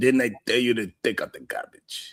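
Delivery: put-on hushed Russian accent in mob boss style. Imitating a woman who sometimes wakes up mad, russian mob boss accent. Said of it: "She sound like a Russian mob boss".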